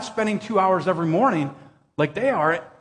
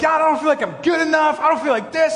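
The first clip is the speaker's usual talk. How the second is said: mock angry, mad, high-pitched yelling outcry; 7 semitones higher, 3 dB louder than usual. Recalling a disappointing shot with no one around, retelling yelling at God. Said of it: "I'm literally yelling at God".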